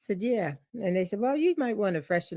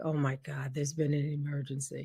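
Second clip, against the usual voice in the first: acted-out panic, quieter; 4 semitones lower, 7 dB quieter than usual. Speaker retells finding a staff member on the ground, retelling own panic. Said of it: "So I'm freaking out because I'm like".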